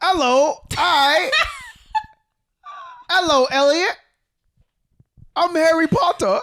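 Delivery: put-on voice, very high, swooping and sing-song. Picking up a phone call while lying in bed, doing a Harry Potter voice. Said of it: "I'm immediately doing a voice".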